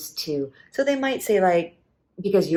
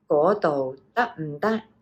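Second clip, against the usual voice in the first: each Cantonese tone pronounced carefully and clearly. Demonstrating Cantonese tones for a learner: careful Cantonese tone demonstration. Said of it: "Just make sure your voice is like".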